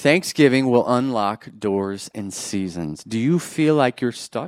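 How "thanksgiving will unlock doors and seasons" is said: very slow, drawn out word by word, low emphasis. Repeating a statement for the people at the back, very slow. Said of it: "I'm going to say that again real slow".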